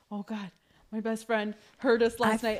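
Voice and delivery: acted worried, fretting, nervous, anxious speech. Retelling a friend's words on the stairs next morning: imitating nervous speech. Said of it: "she was so nervous because she's like".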